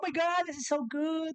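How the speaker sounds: very high, gushy, gushing influencer voice. Complaining about influencers' restaurant recommendations, do an influencer voice. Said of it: "you do the voice so well".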